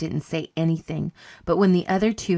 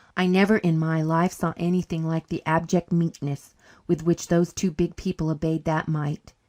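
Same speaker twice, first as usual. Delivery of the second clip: plain reading voice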